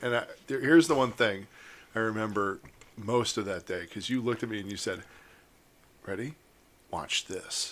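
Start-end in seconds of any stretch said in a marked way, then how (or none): 6.1-7.7 mock hushed, ominous, breathy whisper. Recalling the other speaker's words before dancing: imitating an ominous tone. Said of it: "In that tone that you get".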